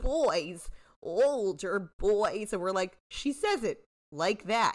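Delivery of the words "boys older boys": normal talking voice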